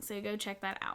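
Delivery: ordinary delivery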